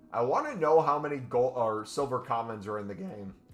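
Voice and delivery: voice cracking. Answering audience questions about the game, voice cracking. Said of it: "My voice just cracked horribly there".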